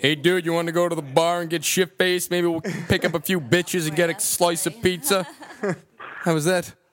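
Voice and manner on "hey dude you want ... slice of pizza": put-on American accent. Asked to show an american accent, speaking in a put-on american accent. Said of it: "Let's hear your American accent".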